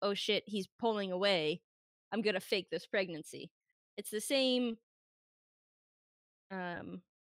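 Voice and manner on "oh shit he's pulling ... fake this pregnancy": plain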